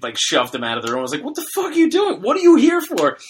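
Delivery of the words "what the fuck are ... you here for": put-on very high-pitched, loud, angry shouting. Retelling shoving a man out of the room: imitating own yelling. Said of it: "I started yelling at him".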